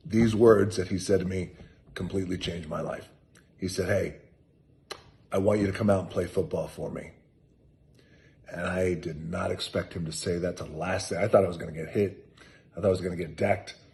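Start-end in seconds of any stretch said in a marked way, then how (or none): none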